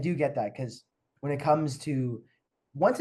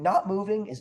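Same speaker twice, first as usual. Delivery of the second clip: voice cracks mid-phrase, jumping high; 6 semitones higher than usual. Speaker explaining constrained options to listeners: voice cracking. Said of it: "my voice just cracked".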